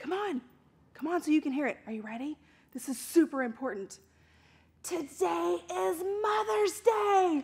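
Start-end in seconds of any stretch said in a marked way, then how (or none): 1.9-7.4 hushed, soft, confiding secret half-whisper. Telling children a secret, coming closer: half-whispering a secret. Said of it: "I'm gonna whisper it to you".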